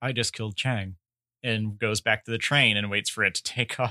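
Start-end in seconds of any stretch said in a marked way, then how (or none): 0.0-1.0 imitated cold delivery. Retelling a film character's line after a stabbing: imitating a cold delivery. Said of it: "very coldly as she walks out says".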